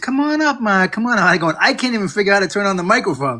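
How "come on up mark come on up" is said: sweet, friendly, slightly high voice. Retelling how she called him up from the cellar: imitating her nice voice. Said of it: "in a nice voice".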